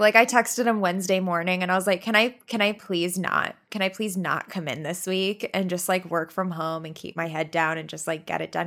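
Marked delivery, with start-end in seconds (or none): none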